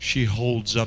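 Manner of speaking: ordinary delivery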